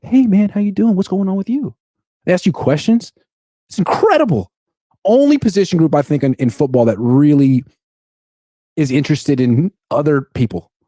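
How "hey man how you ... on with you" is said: mild, easygoing, gentle, high, friendly voice. Speaker imitates football DBs talking in the locker room, very soft voice. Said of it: "they have this very soft voice".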